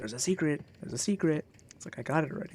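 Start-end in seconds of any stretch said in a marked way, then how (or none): 0.0-1.4 mock whispering. Complaining about a game noise in his ear, imitating a whisper in the ear. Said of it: "it like makes whispers in my ear".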